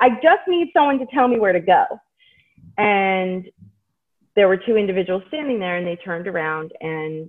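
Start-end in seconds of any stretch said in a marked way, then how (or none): 0.0-1.8 mock fed-up, raised, exasperated, at-wit's-end pleading. Retelling asking people in a hospital waiting area where to go: retelling own exasperated words. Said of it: "in this very exasperated way".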